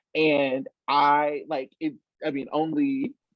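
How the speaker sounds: plain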